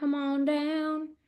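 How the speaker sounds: sudden down-home Southern country accent. Calling the next person on screen up to speak: country accent. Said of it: "I don't know where the country accent came in".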